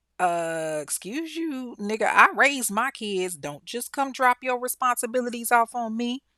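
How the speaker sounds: put-on indignant old woman voice. Retelling the grandmother refusing his dropped-off kids: imitating an indignant grandmother. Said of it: "and she was like".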